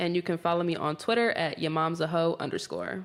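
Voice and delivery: ordinary delivery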